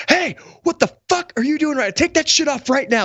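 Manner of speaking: put-on shrill screaming, very high pitch. Retelling yelling at a man in a flight suit: imitating someone screaming. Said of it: "I start screaming".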